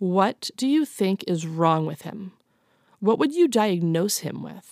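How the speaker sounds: mock flat deadpan delivery. Retelling what a mom's drunk friend asked in a bar, imitating a deadpan question.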